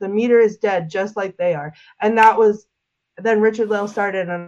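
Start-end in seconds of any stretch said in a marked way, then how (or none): none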